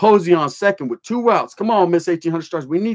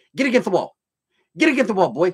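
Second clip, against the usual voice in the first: firm, commanding, barking voice. Retelling how a guard barked orders: Major Payne voice. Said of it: "he had that Major Payne voice".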